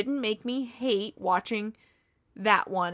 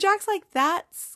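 ordinary delivery

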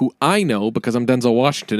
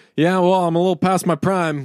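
put-on tired actor voice, higher pitch; 6 semitones higher than usual. Imitating a tired movie character: Denzel Washington impression. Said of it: "That's my Denzel impression".

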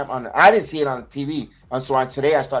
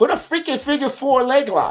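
play-acted very high, high-pitched screaming; 10 semitones higher than usual. Retelling what was shouted at the wrestling match: retelling own screaming. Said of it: "I kept screaming".

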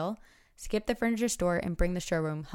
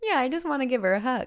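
tearful, raised, pitched-up speech through crying; 6 semitones higher, 5 dB louder than usual. Talking about her sleeping cat, crying while talking. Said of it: "you're crying".

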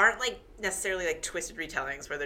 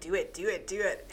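plain

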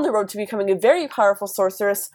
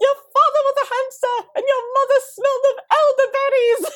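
very high-pitched, yelled voice. Imagining Jim yelling to Merlin, acting out Jim yelling, high-pitched. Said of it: "yelling to Merlin in like a high-pitched voice".

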